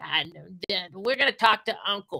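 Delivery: high, whining, whiny voice. Imitating a show character's mother: imitating the mother's whiny voice. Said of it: "Sounds just like her".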